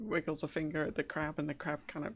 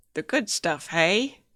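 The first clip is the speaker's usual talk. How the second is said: put-on loud elderly woman's voice; 13 dB louder than usual. Voicing a Kenku character in a game, in an elderly woman's voice. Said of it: "what sounds like an elderly woman's voice".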